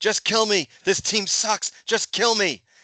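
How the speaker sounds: mock anguished, desperate, high, despairing screaming. Retelling how a friend screamed at the lightning during a postponed game: retelling a friend's screaming. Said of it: "he was screaming".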